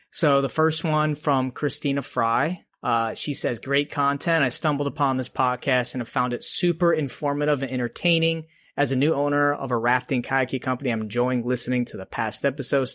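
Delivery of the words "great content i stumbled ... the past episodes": plain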